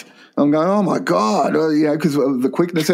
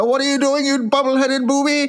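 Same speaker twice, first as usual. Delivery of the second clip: very high-pitched squeaked exclamation; 9 semitones higher than usual. Retelling a convention skit where Smith comes out: imitating Doctor Smith. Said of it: "He goes out there".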